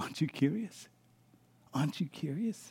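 very soft, faint, hushed, barely voiced whisper. Voicing God speaking to Moses from the burning bush: God whispering. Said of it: "You can almost hear God whispering to Moses".

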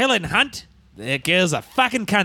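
fake Australian accent, drawled slowly. Rhyming a joke line in a put-on Australian accent. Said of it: "if you have the Australian accent".

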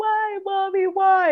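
put-on very high, wailing, pleading little-girl cry. Recalling a little girl in a Target screaming at her mom, imitating her scream. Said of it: "she was like screaming at her mom".

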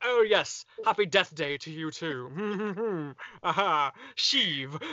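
slow delivery, "too" stretched out. Joking about evil Imperial admirals greeting each other: Grand Moff Tarkin voice. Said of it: "Grand Moff Tarkin going".

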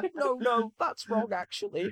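very high, extremely whiny, annoying voice pitched way up. Retelling a radio reply about the flag: whiny Keir Starmer impression. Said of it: "extremely whiny, annoying voice".

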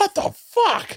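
very high, livid, furious cry of disbelief. Retelling the wife's reaction to the dog peeing on the couch: imitating livid Leanne. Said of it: "Leanne is livid".

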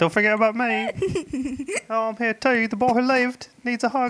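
put-on Australian accent spoken at a very high pitch. Speaker acts out Harry sneaking into Ron and Hermione's hug, Harry in an Australian accent. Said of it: "Why does he sound Australian?".

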